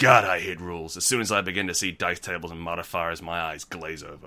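fake American accent. Reading out a player's survey answer, the speaker voices him in a put-on American accent. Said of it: "I'm making him American".

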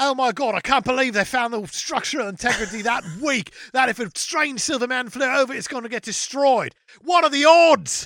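put-on full-volume, high-pitched Australian accent. Acting out a scene for the others: slipping into an Australian accent. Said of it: "you went Australian at the end".

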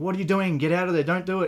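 panicked shouting.

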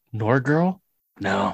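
dismissive aside, half to herself. Retelling a character's aside in an episode: Kamala muttering under her breath. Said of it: "Kamala says under her breath".

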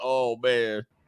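put-on sobbing. Mocking a guy who is crying right now, mock crying. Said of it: "This dude crying right now".

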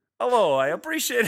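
put-on wild Italian accent. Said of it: "now do it in that crazy Italian accent".

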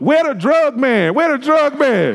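shouting, high-pitched. Retelling how Christy, in labor without an epidural, kept shouting in the hospital; imitating Christy shouting. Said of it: "she was literally shouting in the hospital".

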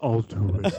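deep, low voice like an action star. Imagining a movie cameo, doing a line in a deep Vin Diesel voice. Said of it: "he's got that deep voice".

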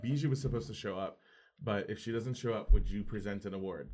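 ordinary talk

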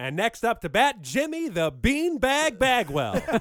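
shrill, booming 1930s ballpark announcer voice. Speaker suddenly breaking into a bit, in a 1930s baseball announcer voice. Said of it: "sounding like a 1930s baseball announcer".

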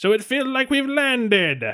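very high cartoon-villain voice. Voicing a pirate speaking over the ship's comms: Skeletor voice. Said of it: "I'm actually going more for Skeletor".

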